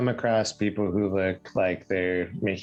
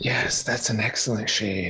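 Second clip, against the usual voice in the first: hushed, whispering voices. Describing whispers that surround a painting character: whispering voices. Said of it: "whispers, like, surround you".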